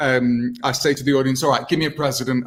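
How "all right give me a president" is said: ordinary delivery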